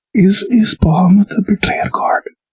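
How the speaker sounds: quiet, hushed whisper. Player leans in to ask one more question, whispering quietly. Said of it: "lean in and whisper really quietly".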